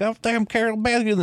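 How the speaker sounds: put-on, very high, squeaky, drawled southern accent. Imitating a man from the movie cursing Carol Baskin: imitating a squeaky southern drawl. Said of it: "squeaky, like, southern drawl".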